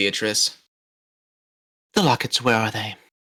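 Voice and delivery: very soft, hushed, low, soft-spoken voice. Voicing a character during a tabletop role-playing game: very soft voice. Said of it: "this very soft voice come out".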